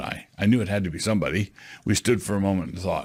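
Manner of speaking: ordinary delivery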